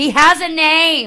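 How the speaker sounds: very high, very slow, loud drawn-out yell. Retelling a friend yelling from the back of a show: imitating Seamus yelling. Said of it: "Just yelled it in the back".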